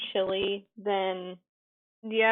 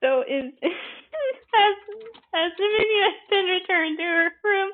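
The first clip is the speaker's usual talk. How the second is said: slow, very high voice, stifling laughter; 9 semitones higher, 4 dB louder than usual. Asking whether Dominion has been returned to her room: holding back laughter. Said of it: "I'm trying to not bust into laughter".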